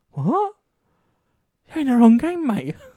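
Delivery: high, loud mock incredulous outburst. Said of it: "which I was like".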